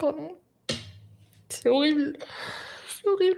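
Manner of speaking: tearful speech, crying while talking. Apologizing to the other speakers, crying while talking. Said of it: "pleure pas".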